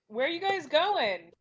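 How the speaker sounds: loud, high calling shout. Voicing Twitch calling after two party members walking away: shouting in character. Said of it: "Twitch is gonna shout".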